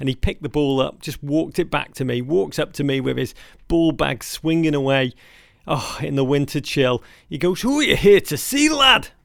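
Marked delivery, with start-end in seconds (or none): 7.6-9.0 very high, loud, poor put-on Scottish accent. Retelling a man's question to him, in a bad scottish accent. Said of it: "My Scottish accent still crap to this day".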